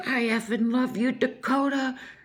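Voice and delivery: angry, adoring, high, drawn-out scream. Retelling how Felicity hits Dakota with a shoe, imitating Felicity screaming at him. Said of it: "just screaming at him".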